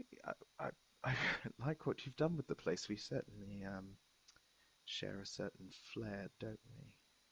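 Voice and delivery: trembling, very hushed, shaky voice straining to sound normal. Player voicing a character walking up and trying to act normal, with a shaky voice. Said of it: "with a bit of a shaky voice".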